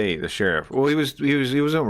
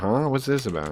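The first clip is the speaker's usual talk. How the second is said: wary, suspicious, puzzled tone, acted out. Reacting to a video, voicing the lady's thoughts as a suspicious onlooker. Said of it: "now she's like".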